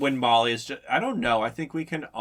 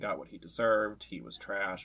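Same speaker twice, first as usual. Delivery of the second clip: ordinary talk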